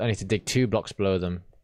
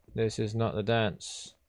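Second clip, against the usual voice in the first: ordinary talk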